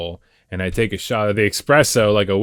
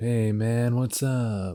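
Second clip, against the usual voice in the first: slow, very smooth, easy and laid-back voice; 3 semitones higher, 7 dB quieter than usual. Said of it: "very [name] attitude, very smooth".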